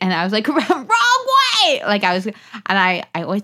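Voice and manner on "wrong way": mock shrill, very high, loud, stretched holler. Retelling coaching a kid who ran the wrong way: imitating own screaming. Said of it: "screaming, like".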